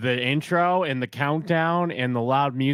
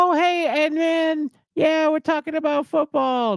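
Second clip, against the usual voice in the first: very high, youthful voice; 4 dB louder than usual. Guessing aloud how a young channel mod sounds: impression of a young mod. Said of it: "Does he sound like that?".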